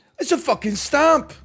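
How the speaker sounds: loud, shrill, very high-pitched blurt, pitched way up. Comparing two voices on the same line: Gordon Ramsay impression. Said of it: "Gordon is like".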